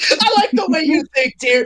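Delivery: amused, chuckling, laughing through the words. Cade answers tyr, laughing while talking. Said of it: "Cade laughing".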